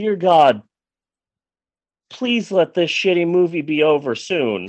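quiet put-on whisper. Retelling praying halfway through a movie: imitating own quiet whisper. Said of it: "whispering quietly".

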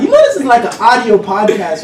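ordinary talk, nothing marked

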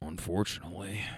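put-on under-breath mutter. Retelling a passenger's reply, imitating someone muttering under breath. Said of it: "under his breath".

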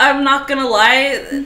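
laughing speech.

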